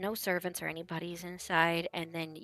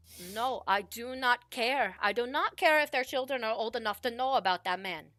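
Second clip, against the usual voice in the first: angry, insistent, heated voice, pitched up; 5 semitones higher than usual. Narrator voices the listener's mother heard through a doorway, arguing. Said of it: "heard your parents argue".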